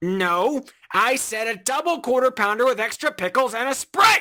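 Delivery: high, loud angry outburst, losing temper.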